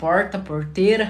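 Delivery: strongly retroflex, loud, curled-back R in porta, porteira. Recalling the speech of Cornélio Procópio: pulled, curled-back R in porta. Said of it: "Onde puxava o R".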